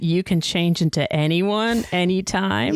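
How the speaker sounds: usual speaking voice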